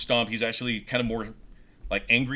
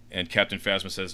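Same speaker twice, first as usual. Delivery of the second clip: usual speaking voice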